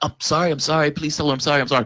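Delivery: put-on apologetic pleading. Recounting a man screaming at them, the speaker is retelling their own apologetic pleading. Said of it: "I'm apologetic".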